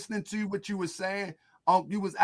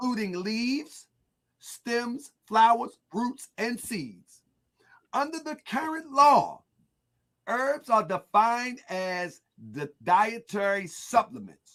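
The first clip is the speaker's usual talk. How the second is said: slow, careful reading voice, higher pitch; 3 semitones higher than usual. Reading a text aloud after apologizing for stumbling: reading slowly. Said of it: "I'm trying to read it slow".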